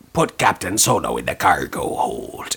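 put-on very low pirate accent. Quote the original voice actor's line about Captain Solo, as Boba Fett with a pirate accent. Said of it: "It was definitely a pirate accent".

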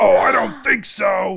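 very loud, rough character shout, bellowed. Voicing a character who jumps up from near death: voicing Keth. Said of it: "Keth's body sort of jumps up, and you hear".

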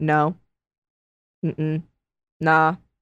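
mock near-inaudible monotone. Recounting a trial, imitating Gabriella answering the judge in a super quiet monotone. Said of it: "super quiet, almost inaudible monotone".

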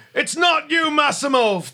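very high, impassioned outcry. Voicing a dwarf monk attacking in a fight: emotional yell. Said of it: "And he yells out".

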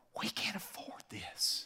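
very quiet, barely voiced whisper. Retelling what was said over a restaurant menu: imitating Laura whispering. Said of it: "she whispers this".

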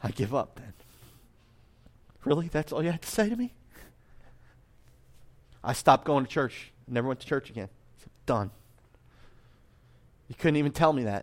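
overcome with emotion. Recalling being told that Dad wasn't happy, choked up. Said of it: "I didn't think this was gonna happen".

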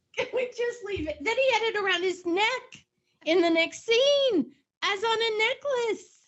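pleading through laughter.

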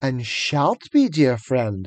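soothing, humoring witch voice. Narrator reading a witch humoring a listener like a child, soothing witch voice. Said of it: "said the witch in a soothing voice".

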